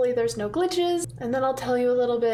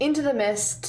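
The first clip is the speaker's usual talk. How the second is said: ordinary talk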